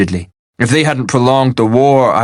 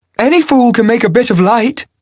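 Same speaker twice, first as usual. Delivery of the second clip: imperious, lordly voice pitched very high; 12 semitones higher than usual. Flid answers after light flares at his fingertips, in an imperious voice. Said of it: "Flid said in an imperious voice, rather higher than his usual tones".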